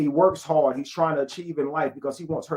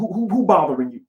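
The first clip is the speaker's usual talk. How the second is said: loud, puffed-up, put-on tough-guy voice; 3 semitones higher, 5 dB louder than usual. Acting out a man protecting a woman: put-on deep voice. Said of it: "He get the deep voice".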